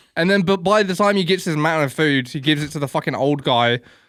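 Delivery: plain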